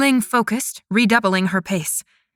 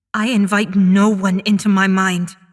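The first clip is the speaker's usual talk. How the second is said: low, angry, snarling growl; 3 dB louder than usual. Answering an unseen voice inside her mind, she growls. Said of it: "she growled".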